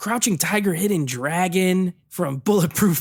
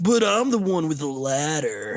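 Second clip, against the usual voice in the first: put-on surfer-dude voice; 2 semitones lower than usual. Retelling a bad movie line, imitating surfer Yamcha voice.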